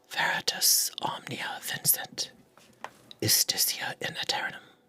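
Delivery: faint, soft whisper, barely voiced. Voicing a woman's voice echoing in a player's mind: whispering. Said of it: "And she whispers to you".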